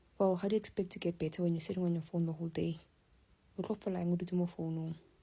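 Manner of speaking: ordinary delivery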